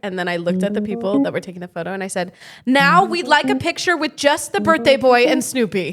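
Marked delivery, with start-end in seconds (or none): 2.7-5.9 insistent, pushy, demanding tone. Retelling asking the photographers for another photo: imitating a pushy stage mom. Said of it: "full stage mom".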